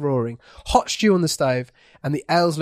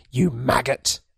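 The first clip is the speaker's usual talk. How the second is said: distinct, clear whisper at lower pitch; 3 semitones lower than usual. Reading a story aloud, the bartender turning away: distinct whisper. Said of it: "distinctly whispers".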